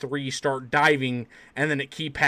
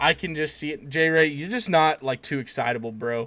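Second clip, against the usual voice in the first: plain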